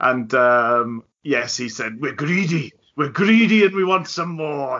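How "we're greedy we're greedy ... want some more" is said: put-on, pitched-up Welsh brogue. Recalling the assistant's post-match radio interview: imitating Chris Evans's Welsh accent. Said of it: "in his lovely Welsh brogue".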